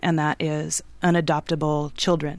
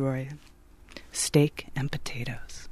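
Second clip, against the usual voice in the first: sultry, slow, soft, drawn-out sexy voice; 3 semitones lower, 8 dB quieter than usual. Asked to say something in a sexy voice, speaker obliges, slow and sexy. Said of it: "Steak and potatoes, real slow like that".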